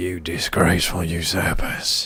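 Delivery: low, strained, harsh throat-shredding stage-villain voice. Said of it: "I can't do that voice, it's gonna shred my throat".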